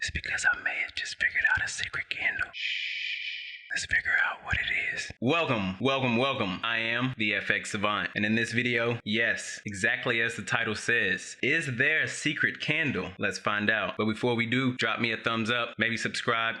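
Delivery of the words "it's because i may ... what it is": secretive, hushed whispered voice. A video host welcomes viewers to a candle video, whispering. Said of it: "why I'm whispering".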